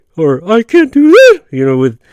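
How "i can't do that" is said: put-on voice cracks, jumping higher in pitch and louder. Retelling a movie scene where cops question a character: imitating high-pitched voice cracks. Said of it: "reacting with high-pitched changes in his voice".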